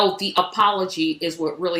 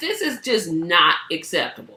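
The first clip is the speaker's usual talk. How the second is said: usual speaking voice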